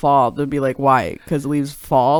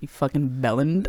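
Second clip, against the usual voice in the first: attempted, put-on British accent; 6 dB quieter than usual. Showing what to say when someone is stupid, in an attempted British accent. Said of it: "it sounds like you're trying to have a British accent".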